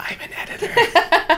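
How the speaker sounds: very high, little whisper. Retelling what the listener whispered to them, say it as a whisper. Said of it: "And then you whispered".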